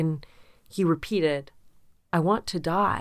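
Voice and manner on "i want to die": mock sorrowful, downcast, sad, plaintive delivery. Retelling what a two-year-old said: imitating Koa saying it sadly. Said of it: "he said it really kind of sad".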